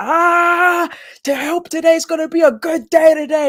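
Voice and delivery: very high furious hollering with a drawn-out "ah". Retelling a guy from a video walking outside, imitating an angry yell. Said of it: "he's like yelling and he's angry".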